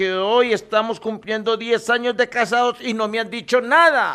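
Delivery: high-pitched, hurt, wounded, scolding complaint.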